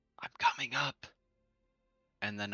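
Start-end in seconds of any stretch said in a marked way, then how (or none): 0.2-1.1 breathy, barely voiced whisper. A player says their character's line before starting to climb the rope: whispering. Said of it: "I'm gonna whisper".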